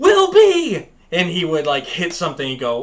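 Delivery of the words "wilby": mock yell, much higher and louder. Retelling a TV show where a kid's mom yells his name, imitating a mother yelling. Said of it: "his mom would yell".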